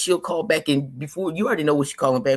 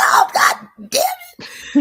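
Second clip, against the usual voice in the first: put-on very high, very slow, drawn-out sobbing; 6 dB louder than usual. Retelling going into a room after disciplining a child, imitating own past crying. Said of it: "I be going in the room crying".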